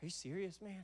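mock near-tears voice. Retelling a stranger's reply on getting his lost phone back: imitating someone near tears. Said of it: "almost to the point of tears".

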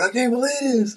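mock very high, piercing, top-of-lungs shriek. Retelling how she reacted when they called the house, imitating someone screaming. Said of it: "She's screaming at the top of her lungs".

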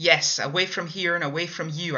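loud, shouted yelling. The narrator, caught sneaking away by Ellis, answers him, shouted. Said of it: "I shouted".

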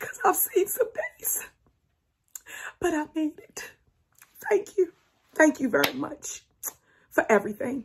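breathy near-whisper with emotion welling up. Thanking viewers at the end of a video, getting emotional. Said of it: "I'm getting emotional".

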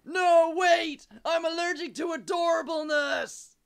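panicked shouting.

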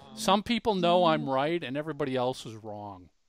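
normal talking voice

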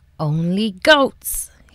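growled, snarling voice. A troll on his bridge answers Peep's question, snarled. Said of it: "he snarled at Peep".

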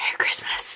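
soft, hushed whisper. Closing with a holiday greeting after saying bye: whispering. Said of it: "I don't know why I whispered that".

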